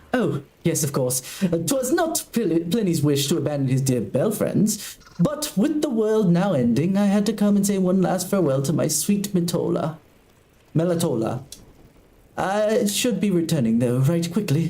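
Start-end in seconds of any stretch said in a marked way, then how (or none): 1.4-14.7 prim, proper, very high-pitched British butler voice. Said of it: "so I have to do that very high-pitched, proper British voice".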